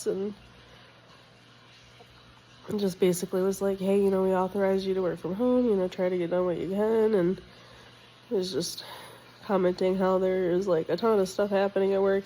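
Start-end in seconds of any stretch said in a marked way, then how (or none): none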